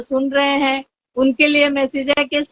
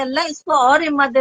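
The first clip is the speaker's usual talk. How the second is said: ordinary talk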